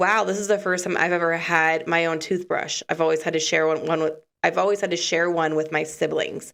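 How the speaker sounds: plain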